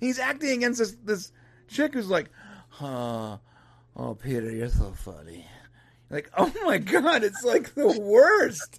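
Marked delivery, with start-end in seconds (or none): 2.7-5.5 mock tired drawl, slow, lower and quieter. Mocking an actress's responses to Peter: imitating a slow, tired delivery. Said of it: "I'm slow and I'm tired".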